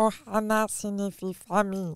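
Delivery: very low, transformed character voice. Turning into the character to say the famous line: Stitch voice. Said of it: "je me transforme".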